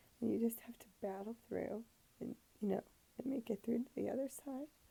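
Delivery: tearful, crying through the words. On anesthesia, the speaker talks while crying. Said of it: "I'm sorry, I'm crying".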